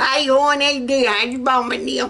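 put-on backwoods country Southern accent. Showing off the Southern accents they can do, in backwoods country Southern. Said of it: "I can do backwoods country southern".

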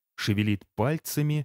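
plain reading voice

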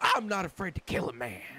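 mock, overdramatic, grand heroic tone. Retelling what a woman said, the speaker quotes her: mock-heroic overdramatic tone. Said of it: "She said it in a really overdramatic, like, heroic tone".

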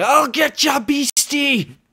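very high, shrill, loud, drawn-out shout. Narrating a tabletop scene, voicing someone coming down the hall, shouting. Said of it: "you hear somebody shouting".

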